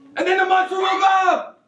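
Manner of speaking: fortissimo, very loud and very high shout. Demonstrating musical dynamics to a student while telling a story: fortissimo, very loud. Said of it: "That was fortissimo".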